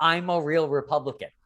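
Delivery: plain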